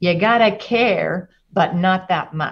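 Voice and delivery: put-on New York accent. Quote a New York negotiator for the Iran-Contra affair, in his New York accent. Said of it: "in his New York accent".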